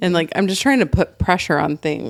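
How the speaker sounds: plain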